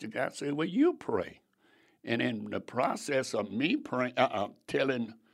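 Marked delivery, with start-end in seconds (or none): 0.5-1.4 sarcastic, pitched-up delivery. Retelling his answer to a child who said to pray: imitating own sarcastic reply. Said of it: "And I'm being sarcastic".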